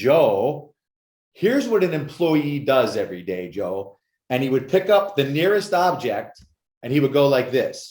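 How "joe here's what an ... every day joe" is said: slow California drawl with "Joe" dragged out. Retelling what his uncle told him every day, in Uncle Tone's California accent. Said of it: "he had this California accent".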